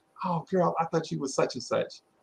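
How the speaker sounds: normal talking voice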